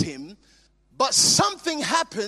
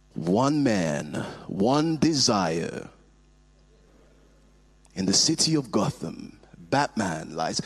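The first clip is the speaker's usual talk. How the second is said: very deep movie-trailer announcer voice; 4 dB quieter than usual. Showing listeners the late announcer's unique voice, in a Don LaFontaine movie announcer voice. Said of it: "the very unique movie announcer voice".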